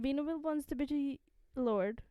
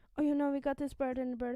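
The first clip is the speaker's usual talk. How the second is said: put-on fast, gasping, breathless talking voice; 3 dB louder than usual. Describing how Amber tells Lord Will everything; imitating Amber's breathless rush. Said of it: "like she has to like, catch her breath in between".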